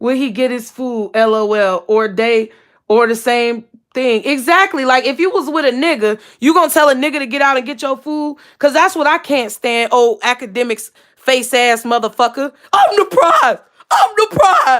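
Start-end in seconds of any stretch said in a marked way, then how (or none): 12.7-14.8 full-out, high, swooping yell. Complaining about someone they can't stand, the speaker is yelling. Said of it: "I just yelled in y'all ear".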